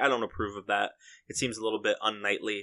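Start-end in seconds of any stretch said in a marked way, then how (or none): none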